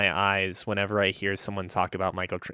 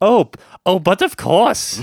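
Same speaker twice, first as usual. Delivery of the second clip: shrill, booming, very high fake Scottish accent; 11 semitones higher, 12 dB louder than usual. Retelling what Mariana said back, in a Scottish accent as Mariana. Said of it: "fucking Scottish accent".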